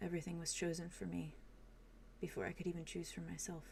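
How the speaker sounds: soft hushed delivery. Voicing a character who takes a shaky deep breath: soft voice. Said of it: "his voice kinda softly says".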